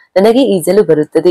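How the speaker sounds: plain reading voice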